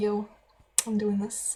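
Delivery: ordinary talk, nothing marked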